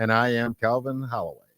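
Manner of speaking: silky, easy, smooth and polished delivery. A co-host introduces themselves at the start of the show: smooth delivery. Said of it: "You said that so smooth".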